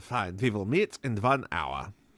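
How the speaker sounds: low put-on old man voice with Russian accent. Telling a story, the speaker voices an old man on the phone, Russian accent. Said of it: "I don't know why I made him Russian".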